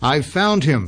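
shouting, pitched high. Peters calls out as security men pour from the burned woods, shouting. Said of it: "Peters shouted".

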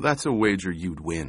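plain

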